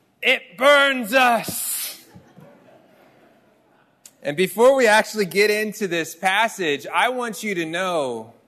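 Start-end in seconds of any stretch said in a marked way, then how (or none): 0.2-2.0 high, pitched-up creature voice. Retelling her reply after you told her the sentence you wrote, use a Sméagol voice. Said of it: "in genuine Schmeagle voice".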